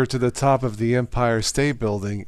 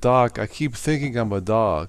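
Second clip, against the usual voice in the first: normal talking voice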